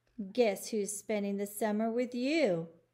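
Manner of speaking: usual speaking voice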